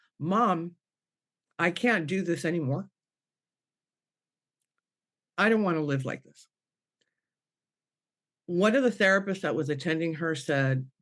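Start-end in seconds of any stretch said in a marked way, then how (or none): 0.2-6.5 put-on sobbing, pleading tone. Retelling a daughter's words from her bed: imitating someone sobbing. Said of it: "she's just sobbing".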